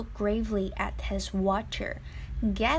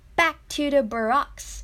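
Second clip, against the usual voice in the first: stern, no-nonsense, raised voice; 5 semitones higher, 6 dB louder than usual. Narrator reading a man at the mirror giving an order: stern. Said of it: "he said sternly".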